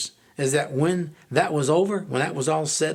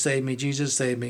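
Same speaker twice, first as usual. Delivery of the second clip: mock, desperate, pleading, begging cry; 3 semitones lower than usual. Retelling crying out to Jesus on the floor: reenacting crying out in a plea. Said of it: "I'm crying out to Jesus".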